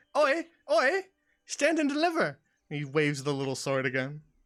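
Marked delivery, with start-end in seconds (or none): 0.1-2.3 tiny, very high, slow mouse voice. Narrator voicing a creature that waves its paws at the players, high-pitched voice. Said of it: "in sort of a, a high pitched voice".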